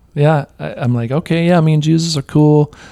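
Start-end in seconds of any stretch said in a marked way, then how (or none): 1.1-2.6 mildly mocking, teasing tone, higher pitch. Retelling how they answered an old buddy talking about Jesus, retelling mildly mocking reply. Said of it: "I'm mocking him a little bit".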